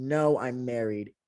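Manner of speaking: deepest, very deep, aggressive bass voice. Retelling a man's reply to a question: imitating a very deep aggressive voice. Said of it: "The deepest voice I have ever heard".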